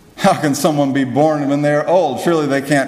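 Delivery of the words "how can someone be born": plain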